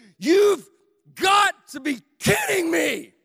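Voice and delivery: very loud, swooping, drawn-out, fed-up frustrated yell. Recalling shaking a stuck hotel door, retelling a yell. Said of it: "yelling in the hotel".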